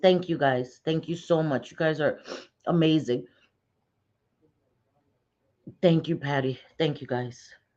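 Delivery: tearful voice, crying while talking. Thanking viewers for their kind messages, crying while talking. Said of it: "I hate when I start crying".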